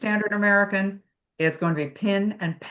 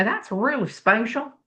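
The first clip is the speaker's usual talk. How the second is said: put-on Texas accent; 2 semitones higher than usual. Speaker recalls what their instructor from Texas would say, imitating a Texas accent. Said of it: "my one uh, instructor was from Texas".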